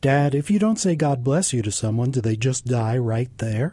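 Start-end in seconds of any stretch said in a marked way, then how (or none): none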